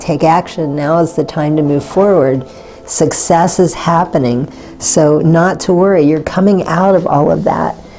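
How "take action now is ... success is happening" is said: ordinary talk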